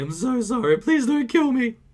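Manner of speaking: very high, cowardly, pathetic sobbing, begging tone. Retelling how a man on his knees begged for mercy, imitating cowardly crying. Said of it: "just begging for mercy".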